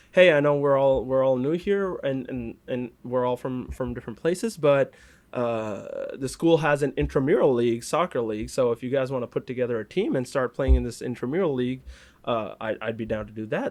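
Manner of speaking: plain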